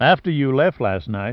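ordinary delivery, nothing marked

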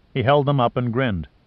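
plain

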